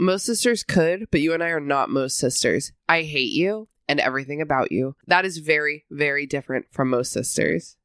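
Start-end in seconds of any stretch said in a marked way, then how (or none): none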